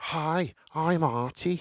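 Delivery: put-on big man's voice with a Liverpool accent. Telling a joke where a big man walks into a pub, Artie in a Liverpool accent. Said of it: "Was that good for Liverpool?".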